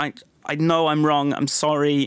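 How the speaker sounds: angry, drawn-out delivery. Retelling an own past apology to another speaker: imitating an angry apology. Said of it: "I say it angrily".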